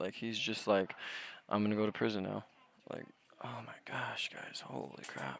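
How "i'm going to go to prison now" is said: cold, flat, emotionless deadpan delivery. Imitating a caller who sounds like he has no empathy: imitating an emotionless caller. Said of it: "He just sounds like a psychopath".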